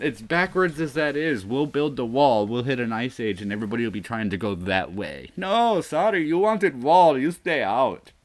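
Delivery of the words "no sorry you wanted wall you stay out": loud, high, terrible put-on Mexican accent. Imagining mexico turning people away at a border wall, in a horrible mexican accent. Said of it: "That was a horrible Mexican accent".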